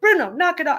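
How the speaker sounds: excited voice, pitch climbing up and up. Retelling how his wife tells the barking dog off, imitating Elisa's rising excited voice. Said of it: "Lisa's voice will tend to go up and up".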